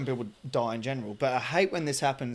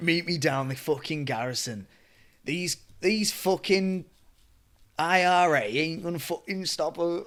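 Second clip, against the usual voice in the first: put-on Birmingham accent, a bit off, pitched up; 5 semitones higher, 3 dB louder than usual. Quoting lines from a show: put-on Peaky Blinders accent. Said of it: "My fucking Peaky Blinders accent is a bit off".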